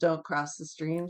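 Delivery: ordinary delivery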